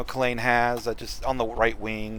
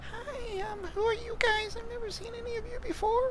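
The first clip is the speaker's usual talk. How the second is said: tiny, very high-pitched kitten voice; 6 dB quieter than usual. Repeating the kitten's greeting to the group, small kitten voice. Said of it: "It's hard to do a small voice".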